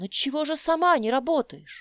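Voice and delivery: shouting. Paul shouts back at Rosa during an argument about money, shouting. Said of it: "крикнул он".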